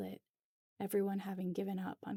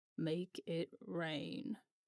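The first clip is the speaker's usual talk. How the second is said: low, put-on old grandpa voice; 3 semitones lower than usual. Retelling what a man said to her, imitating a grandpa voice. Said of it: "I lower my voice and imitate exactly how he said it, like a grandpa".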